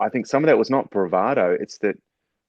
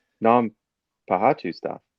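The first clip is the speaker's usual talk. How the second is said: baffled, puzzled, quizzical tone. Telling a story where a staff member questions a man, acting out his mock-quizzical reply. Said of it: "looks at him really quizzically and goes".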